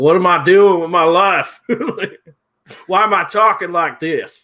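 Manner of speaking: put-on loud sloppy drunk talk around a mouthful. Acting out a drunk with a mouth packed with tobacco: mock drunk with mouth full of dip. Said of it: "Drunk as fuck. Like".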